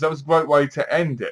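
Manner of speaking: ordinary talk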